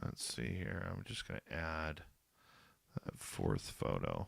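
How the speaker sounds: hushed, very quiet, breathy, almost whispered. Adding a photo while talking, talking quietly. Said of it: "I'm sounding quiet is 'cause I'm talking quiet".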